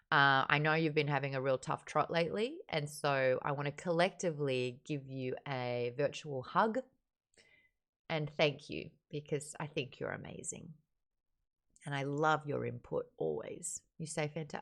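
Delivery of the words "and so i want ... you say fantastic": choked-up voice, catching with emotion. Thanking a fellow book club member for sticking with the book, choked up. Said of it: "Am I getting choked up?".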